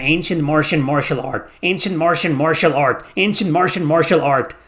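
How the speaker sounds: said as fast as possible, rattled off. Repeating a tongue-twister phrase, saying it as fast as possible. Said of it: "Try saying that as fast as you can".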